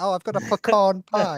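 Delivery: put-on very slow, high, drawn-out posh English accent. Mocking the other speaker's way of saying pecan: mocking posh English accent. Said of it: "you sound like a fucking posh English person".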